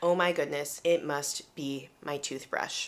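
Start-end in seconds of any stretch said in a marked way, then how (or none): none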